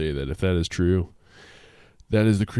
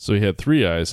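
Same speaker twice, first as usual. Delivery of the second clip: plain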